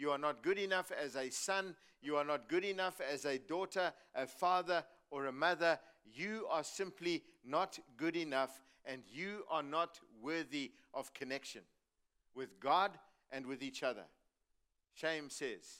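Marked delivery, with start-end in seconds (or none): none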